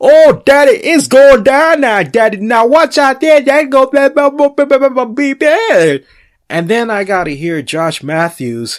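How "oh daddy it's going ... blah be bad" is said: very high, very loud play-by-play commentary. Retelling wrestling commentary, imitating Pope's commentary. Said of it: "I got Pope".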